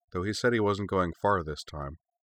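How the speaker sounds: plain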